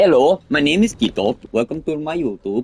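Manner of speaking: put-on Indian English accent throughout. Copying people on request, introducing himself: imitated Indian accent. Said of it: "Indian accent".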